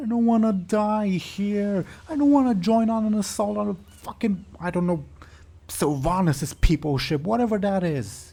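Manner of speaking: weaselly character voice. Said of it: "What did Bud say?".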